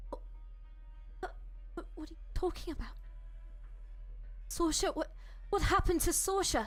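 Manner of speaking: put-on British accent slipping in. Voicing a character who hears that Sorsha was killed, British accent. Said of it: "I just realised I'm doing a British accent".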